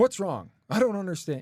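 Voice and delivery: loud, high, pushy, confrontational, aggressive tone. Explaining how not to open a conversation, acting out an aggressive tone.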